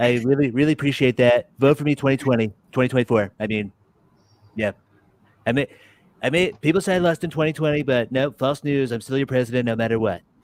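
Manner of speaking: put-on voice with full swagger. Thanking a viewer after a request for a better Donald Trump voice. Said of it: "Donald Trump's voice".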